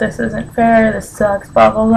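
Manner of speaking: put-on freaked-out moan through tears, crying. Retelling breaking down in tears with a fever: retelling own tearful complaint. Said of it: "started freaking out and just started crying and just saying".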